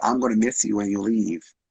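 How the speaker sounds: play-acted weepy words spoken through tears. Retelling what a partner said while crying: imitating someone crying. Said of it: "starts crying again".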